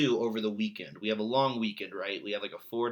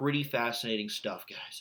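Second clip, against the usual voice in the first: usual speaking voice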